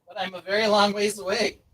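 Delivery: high, fake yell as if from far away. Pretending to be a long ways away: put-on shout from far away. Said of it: "we know you're shouting".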